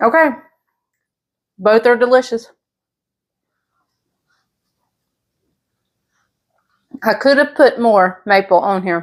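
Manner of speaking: speaking with mouth full while chewing. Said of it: "Sorry if you can hear me chewing".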